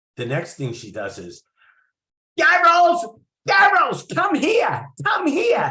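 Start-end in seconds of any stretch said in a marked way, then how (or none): 2.4-5.7 put-on thick New York accent, shrill, very high, very loud. Retelling a reading, quoting the woman calling him over, in Judy's thick New York accent. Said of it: "Thickest New York accent I ever heard".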